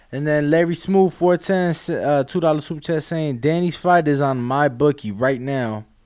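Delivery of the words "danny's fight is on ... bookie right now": ordinary delivery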